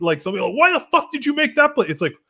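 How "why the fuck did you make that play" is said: mock, shrill, raging yell, very high, top of lungs. Retelling what a player yells during a game: imitating a guy screaming. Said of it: "a guy screaming at the top of his fucking lungs".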